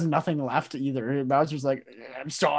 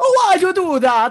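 shrill, very loud, high squealing cartoon voice; 8 dB louder than usual. Joking about the dream ending, speaking as Mario: imitating Mario. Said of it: "and he's like".

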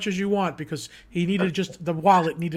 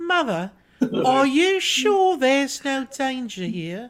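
put-on, polite little British child voice; 7 semitones higher, 3 dB louder than usual. Retelling the mother's answer on the ride, imitating a UK mother's voice. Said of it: "I'm gonna do the voice for you".

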